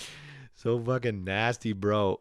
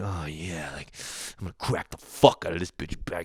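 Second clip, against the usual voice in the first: imitated man's voice, relishing, savoring; 6 semitones lower, 3 dB quieter than usual. Retelling how a man popped a lady's huge back zit, imitating a man relishing it. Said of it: "he's like feeling it".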